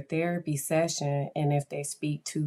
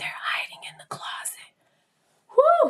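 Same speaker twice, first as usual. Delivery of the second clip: put-on child's whisper, higher; 3 dB louder than usual. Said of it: "she was whispering in my ear like that".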